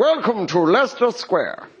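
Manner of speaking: posh, upper-class announcer voice. Imitating an announcement on the tube at leicester square, in a posh voice. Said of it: "this posh voice goes".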